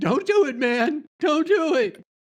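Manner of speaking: very high, shrill, loud put-on scream. Describing a player character's action, then screaming in character: screaming a warning. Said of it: "I'm just screaming".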